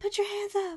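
timid, meek, very high voice. Retelling how a timid trainee gave a command: imitating a soft-spoken character. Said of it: "she'd be very soft-spoken".

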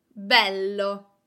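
bello with the be leaned on, first-syllable stress. Explaining that bello means beautiful: stress on the be of bello. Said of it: "I am putting the accent on the first vowel, on the E sound".

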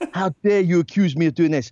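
bad Geordie accent sliding into Scottish. Recounting how Heather flat out denied it, a failed Geordie impression of Heather. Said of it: "That was like Scottish".

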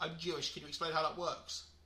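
normal talking voice

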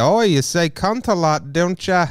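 high, slow, drawn-out mock American accent. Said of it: "doing an American".

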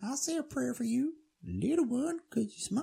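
very high, squeaky, funny voice. Retelling a story, quoting Jack Horner in a high-pitched squeaky voice. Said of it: "In his really funny, like high-pitched, squeaky voice".

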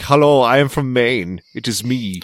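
put-on slow, plain, clearly non-American accent. Mocking an actor who is supposed to be from Maine: imitating Peter Skarsgård's non-American accent. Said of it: "He's supposed to be American. He's like".

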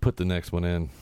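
plain

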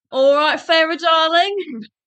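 bad put-on Cockney accent. Trying out accents for characters with another speaker, bad Cockney accent.

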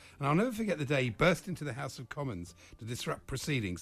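ordinary delivery

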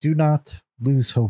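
half-whispered inner voice. A voice speaks in a player character's head as they chisel, soft half whisper. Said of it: "a soft voice in your head, half whisper".

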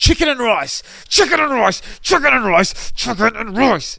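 furious, very high, very loud, shrill hammering repetition. Retelling a friend repeating his food order to a waiter: imitating an angry customer. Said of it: "he starts swearing at this poor Indian man".

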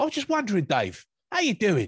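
put-on London Cockney accent, high, sing-song and swooping. Retelling a phone-call story the way they imagine it, in a Cockney accent. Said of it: "I always imagine that story being told like in a Cockney accent".

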